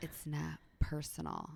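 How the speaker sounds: mock sly delivery. Imitating another realtor's favourite saying: imitating a sly tone. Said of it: "say it so sly".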